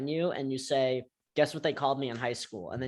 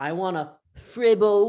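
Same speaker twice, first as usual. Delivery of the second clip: put-on very loud, high, screamed British accent; 7 semitones higher, 10 dB louder than usual. Retelling friends reading menu items at a restaurant, imitating Ezra's British accent. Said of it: "reading all the menu items in a British accent".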